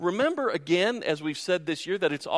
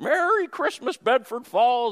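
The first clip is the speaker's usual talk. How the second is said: lame, pitched-up put-on voice; 8 semitones higher, 5 dB louder than usual. Retelling a scene from It's a Wonderful Life: lame Jimmy Stewart impersonation. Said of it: "my really lame Jimmy Stewart impersonation".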